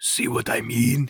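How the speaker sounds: very quiet, soft whisper. Retelling Alexi's aside after Fenriel's outburst, Alexi whispering quietly. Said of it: "He whispers really quietly".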